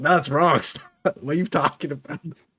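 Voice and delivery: play-acted, loud, high-pitched shouting. Showing how they yell at the screen themselves: imitating own yelling at the screen. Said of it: "you yelling at the screen".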